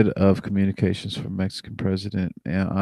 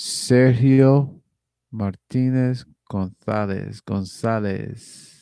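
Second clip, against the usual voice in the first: careful, very slow put-on Mexican accent; 2 semitones higher than usual. Reading names aloud from a list: put-on mexican accent. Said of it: "I'm gonna do the best I can to have the best Mexican accent".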